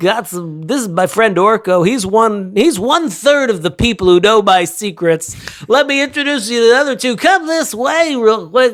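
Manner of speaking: put-on sportscaster announcer voice. Voicing a character who introduces his friend Orko, in a Marv Albert voice. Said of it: "Why is he Marv Albert?".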